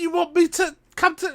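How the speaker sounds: high-pitched, uncaring, dismissive put-down tone. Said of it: "he really doesn't care".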